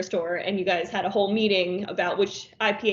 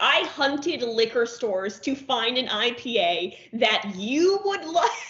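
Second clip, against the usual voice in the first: slow, heavy, put-on guilt-tripping voice; 4 semitones higher than usual. Imitating the other speaker as a mom, laying on the guilt: guilt-tripping mom. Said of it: "you are going to just lay on the guilt".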